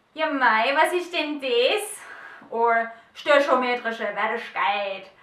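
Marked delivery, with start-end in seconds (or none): 0.2-2.0 loud, slow, put-on German regional dialect. Showing examples of dialect and accent, doing a german regional dialect. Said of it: "if we go for dialect and accent".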